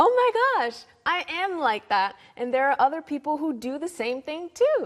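high, excited gush of realization.

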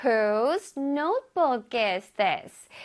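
very slow, careful, deliberate modeled delivery. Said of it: "One more time".

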